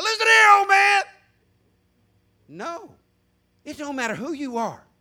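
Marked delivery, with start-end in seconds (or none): 0.0-1.0 loud, high-pitched screaming. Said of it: "shouting, turning stuff over, screaming out".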